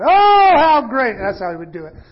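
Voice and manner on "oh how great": shrill, very high, very loud shout. Retelling how Nina stopped a heated debate: imitating Nina shouting. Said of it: "Nina would shout".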